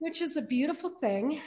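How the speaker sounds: normal talking voice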